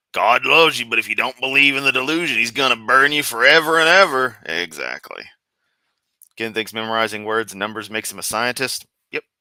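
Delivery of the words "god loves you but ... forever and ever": accent from Memphis. Switching straight from a country twang to a Memphis accent. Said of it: "instantly from that to a Memphis accent".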